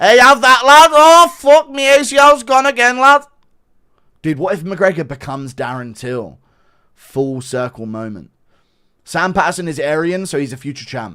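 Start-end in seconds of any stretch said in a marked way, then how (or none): 0.0-3.2 very loud, very high-pitched put-on voice. Doing an impression reacting to a flying kick, Paddy Pimblett impression. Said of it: "Paddy Pimlet impression of Connor's flying kick".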